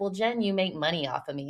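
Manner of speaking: ordinary delivery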